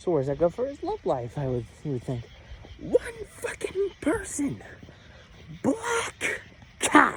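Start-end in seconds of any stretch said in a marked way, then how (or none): 2.8-7.2 forceful shouting, all in a whisper. Walking at 12:40 in the morning, talking to listeners, whisper yelling. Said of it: "You're wondering why I'm whisper yelling".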